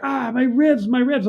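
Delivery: high-pitched, wincing, pained cry. Retelling how the rescued captain reacted to his ribs being squeezed: imitating a man screaming in pain. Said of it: "he screams".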